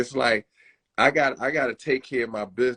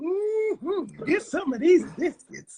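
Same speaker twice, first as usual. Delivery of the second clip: very high-pitched TV commercial lady voice. Joking about eating Popeyes: imitating the Popeyes commercial lady. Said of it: "the lady from the commercial".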